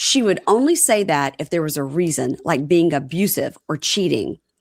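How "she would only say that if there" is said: ordinary delivery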